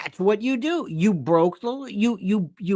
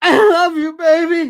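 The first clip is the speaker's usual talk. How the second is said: mock drunk voice, higher and louder; 8 semitones higher, 8 dB louder than usual. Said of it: "those four o'clock in the morning calls to an old girlfriend".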